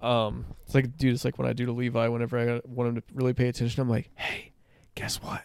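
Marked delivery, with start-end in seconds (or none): 4.1-5.4 very hushed, soft whisper, barely above a breath. Retelling how they get a kid's attention: imitating own whisper. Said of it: "And I start whispering".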